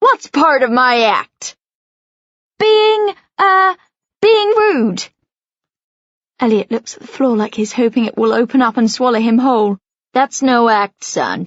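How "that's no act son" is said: growling cab driver voice, slower. A cab driver replying to a passenger, in a growling cabbie voice. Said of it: "the cabbie growls".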